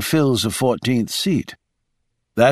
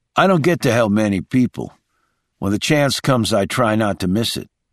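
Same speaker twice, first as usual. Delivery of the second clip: ordinary delivery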